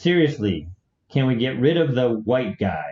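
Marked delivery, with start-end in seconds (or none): none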